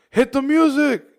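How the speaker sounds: high, loud yell.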